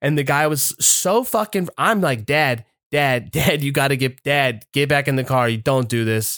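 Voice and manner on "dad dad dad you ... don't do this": acted desperate pleading tone, imploring and urgent. Retelling begging a father to get back in the car: imitating pleading with dad. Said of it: "I'm pleading with this man".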